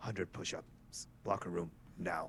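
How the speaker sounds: mock muttered speech. Voicing a serious teammate giving an order: Ravi muttering under his breath. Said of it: "you just see Ravi under his breath".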